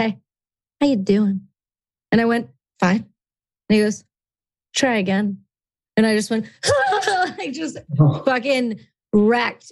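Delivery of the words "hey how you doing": mock-creepy put-on voice. Retelling a ranger guest leaning in at the show's end, imitating Griff's creepy greeting. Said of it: "leaned in real creepy like this".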